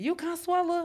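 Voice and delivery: very high, dazzled, starstruck voice. Retelling a stranger asking her name: imitating a starstruck fan. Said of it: "like she just seen her superstar".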